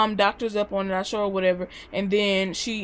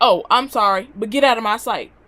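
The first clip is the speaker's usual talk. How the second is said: loud, put-on angry, dismissive brush-off; 5 dB louder than usual. Retelling the mother's reply after the whipping stopped, imitating angry mother. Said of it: "She was mad that I got it loose".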